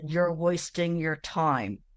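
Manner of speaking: spoken through clenched, gritted teeth. Retelling a spirit's recorded reply: imitating speech through clenched teeth. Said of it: "sounded just like he was, you know, clenching his teeth".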